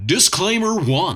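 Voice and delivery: put-on TV announcer voice. Giving disclaimers before going on, spoken in a TV announcer voice. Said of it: "I'm going to do it in a T V announcer voice".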